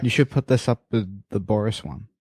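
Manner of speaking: ordinary talk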